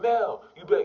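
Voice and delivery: high, loud yell, calling out over distance. Retelling yelling from the bleachers to a friend on the field: retelling own yell. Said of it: "I yell".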